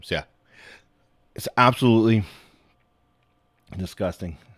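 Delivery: slightly choked-up voice. Talking about Terrence Williams, the speaker sounds a little choked up. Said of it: "I got a little choked up there".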